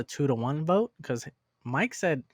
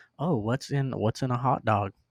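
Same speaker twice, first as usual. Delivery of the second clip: normal talking voice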